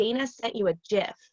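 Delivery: plain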